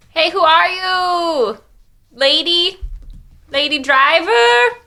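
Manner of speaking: very slow, high, drawn-out call carried across distance. Calling out to a distant wagon driver: yelling across a distance. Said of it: "yelling across the way".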